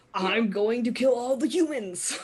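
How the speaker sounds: put-on alien creature voice. A player announces a voice, then speaks as a Krogan: Krogan voice. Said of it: "I've got my Krogan voice".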